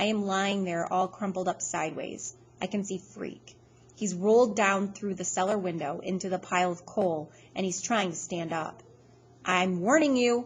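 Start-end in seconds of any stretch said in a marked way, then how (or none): 9.4-10.5 bold, fierce delivery. Reading a story, a character in a coal pile warns someone, in a fierce, bold way. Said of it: "he says in that fierce, bold way he has".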